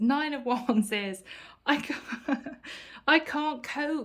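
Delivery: words broken up by laughing throughout. Tarot reader addressing Taurus viewers, apologizing to the guys, laughing while speaking. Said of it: "I'm sorry I'm laughing".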